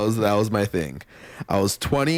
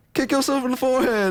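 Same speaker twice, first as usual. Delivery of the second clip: acted-out shrill shouted yell, very high and sudden. Recounting what an unknown person yelled at him, retelling a yell. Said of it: "And then they just yell".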